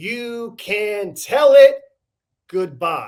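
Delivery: leaning hard, heavy stress on tell and it. Showing how emphasis slows delivery down: stress on tell it. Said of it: "by emphasizing the middle two words in this".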